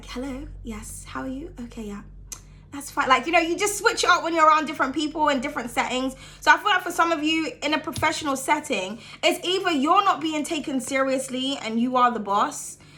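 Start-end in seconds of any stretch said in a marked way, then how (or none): 0.0-3.1 hushed, breathy, whispery telephone voice. Showing how people switch their voice when answering the phone, telephone voice. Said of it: "we call it like the telephone voice".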